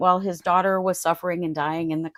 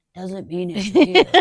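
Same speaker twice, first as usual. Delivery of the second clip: put-on hoarse gravelly voice, louder; 6 dB louder than usual. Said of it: "the very hoarse, uh, like you guys said, the Batman voice".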